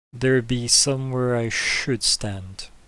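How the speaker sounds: slow, halting speech. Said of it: "as if just learning how to talk back in the mind speak".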